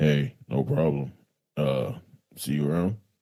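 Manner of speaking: put-on very low, deep, soft male voice. Retelling a man's reply after being thanked, in a put-on deep voice. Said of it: "he's got this deep voice".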